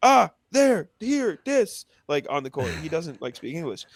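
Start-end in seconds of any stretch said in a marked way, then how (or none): 0.0-1.8 put-on very high, drawn-out scream. Retelling how a player talks to teammates on court: imitating Yang Hansen screaming. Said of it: "he's just screaming".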